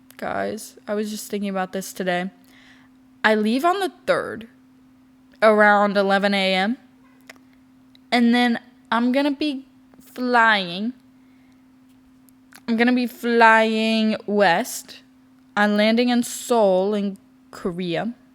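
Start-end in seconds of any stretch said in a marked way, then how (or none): 3.2-18.1 very slow, deliberate, drawn-out step-by-step pacing. Speaker telling the guys about leaving on the third, talking really slowly. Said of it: "I'm talking really slow".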